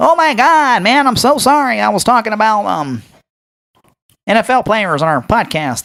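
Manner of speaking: put-on corny guy voice.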